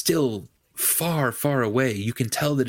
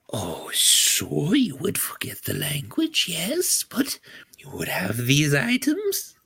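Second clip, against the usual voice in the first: put-on old gnome woman voice; 3 semitones higher than usual. Game master playing an old gnome trader answering a player's question, old gnome woman voice. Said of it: "I don't mind Viscera as much as the next old gnomish woman".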